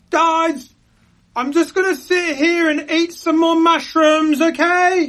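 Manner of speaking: top-of-the-lungs, very high, loud, drawn-out yell. Calling out to others who have disappeared, yelling at loudest voice. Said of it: "I'm gonna yell at my loudest voice".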